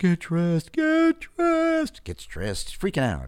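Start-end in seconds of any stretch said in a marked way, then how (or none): 0.0-2.0 high eerie ghost voice, stretched very slow. Telling a joke about a guy woken at night by a voice: ghostly voice. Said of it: "The voice says".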